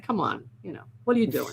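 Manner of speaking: put-on bossy tone. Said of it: "pulling rank and saying".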